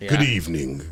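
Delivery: voice dropped deep and creepy. Pitching a funeral commercial, the speaker sits up and greets in a creepy Undertaker voice. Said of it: "we got the voice".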